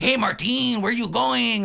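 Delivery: fake Mexican accent. Reviewing a show and quoting its character Moco: Moco's fake Mexican accent.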